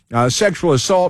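ordinary talk

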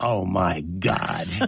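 mock appalled, revolted, disgusted tone. Retelling a cops reporter walking in on him applying makeup: mock disgust. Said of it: "with disgust".

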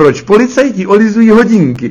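hammed-up high, loud joking character voice.

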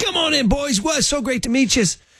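very high, failed put-on North Dublin accent. Retelling being greeted by a man on arrival, attempted North Dublin accent. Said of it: "I can't do a North Dublin accent".

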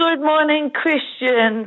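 downcast, sad, heavy-hearted delivery. Greeting the host, who then says she sounds down or sad: sounding a bit down. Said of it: "you sound a bit down or sad".

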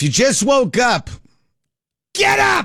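very high, swooping, hyped, excited yell. Telling listeners who just woke up to rise: excited shout. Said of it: "Sorry. Forgive me. I got excited".

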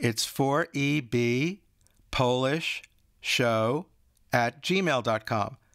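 slowed right down, very slow. Giving the show's email so anyone can grab a pen, saying it very slowly. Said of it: "I'm going to say it very slow".

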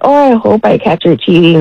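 ordinary delivery

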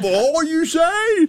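put-on very high grandfather voice. Retelling a grandfather's reply to a raise request: imitating grandfather. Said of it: "He went".

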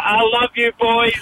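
fond, high-pitched shout.

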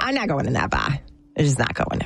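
put-on low grumble in a Boston accent. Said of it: "I could do my Boston accent".

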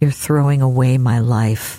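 very quiet voice. Retelling what a woman in a wheelchair said as her books were boxed, very quietly. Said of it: "she very quietly says".

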